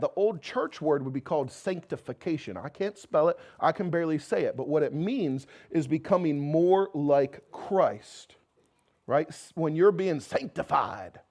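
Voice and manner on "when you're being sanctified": put-on southern pulpit preaching voice. Speaker addressing a tough crowd, trying a southern preacher voice. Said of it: "I was trying my southern preacher voice".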